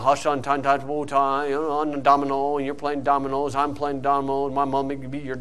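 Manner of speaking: dull, low, flat, droning preacher monotone. A preacher imitating boring church sermons, in a boring monotone preacher voice. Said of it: "it's real monotone".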